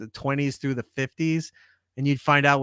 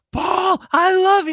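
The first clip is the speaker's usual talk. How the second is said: put-on very high, drawn-out, starstruck excited scream; 7 dB louder than usual. Retelling a man running and screaming across the street, imitating excited screaming. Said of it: "goes running and screaming".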